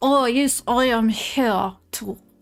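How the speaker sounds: put-on French-accented speech. Retelling what a french filmmaker said on arrival: french accent. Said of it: "how do you do a French accent?".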